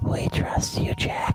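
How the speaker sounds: whispered softly. Retelling how an invisible character whispers in someone's ear: whispered. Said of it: "he actually whispers it because he's now invisible".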